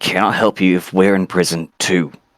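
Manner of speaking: quiet, hushed half-whisper under the breath. As Brom, speaking to him in front of the party: Brom's quiet half-whisper. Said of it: "Brom quietly whispers to him".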